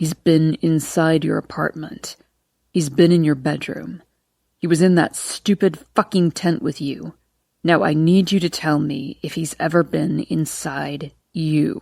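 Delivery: deep threatening whisper. Reading a novel aloud, a character confronting her: deep threatening whisper. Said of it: "his voice a deep, threatening whisper".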